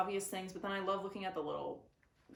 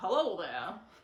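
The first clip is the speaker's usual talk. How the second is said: put-on 1920s-style voice, much louder; 7 dB louder than usual. Describing how Gatsby stands out from everyone else, in a Gatsby voice. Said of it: "Yes, that was good".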